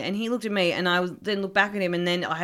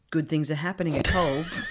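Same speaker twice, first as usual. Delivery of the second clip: mock-quiet, slightly threatening, lower pitch; 4 semitones lower than usual. Retelling what a man said before walking off, retelling a quiet, threatening line. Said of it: "he just kind of said kind of quietly".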